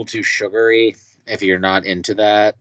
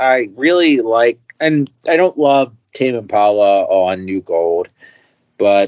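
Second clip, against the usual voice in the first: usual speaking voice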